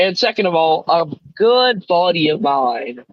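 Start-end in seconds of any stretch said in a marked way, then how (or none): 0.9-2.9 extremely heavy sarcasm, swooping and drawn out. Calling the team's manager a good buddy, extremely sarcastic. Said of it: "I'm saying that extremely sarcastically".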